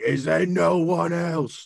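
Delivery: loud action-hero yell. Describing his character standing in the middle of the arena, Brad Pitt in Troy yelling. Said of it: "just yelling".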